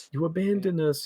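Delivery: very high crying voice, sobbing wail. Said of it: "while crying".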